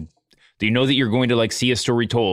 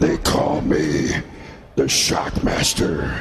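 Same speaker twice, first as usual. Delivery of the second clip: put-on voice-box voice, lower pitch; 6 semitones lower than usual. Doing the Shockmaster's line after talk of a voice box: Shockmaster voice. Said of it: "Is that what the Shockmaster was?".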